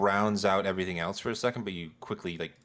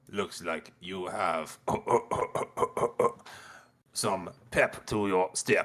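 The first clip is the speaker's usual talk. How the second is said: attempted put-on frog voice. Voicing an annoying character in a game: attempted frog voice. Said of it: "I'm trying to do a frog".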